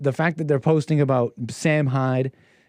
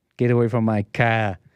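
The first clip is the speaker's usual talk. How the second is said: mock Boston accent, lower pitched; 6 semitones lower than usual. Repeating the driver's line from the video: imitating a Boston accent.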